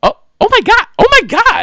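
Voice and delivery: shrill, swooping, very high-pitched and very loud. Retelling what his wife exclaimed during a live stream, really high-pitched voice. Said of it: "in a really high pitched voice".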